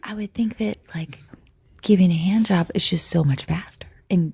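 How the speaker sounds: stage whisper. Speaker whispers because their mom is in there: whispering. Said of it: "I'm whispering because my mom's in there".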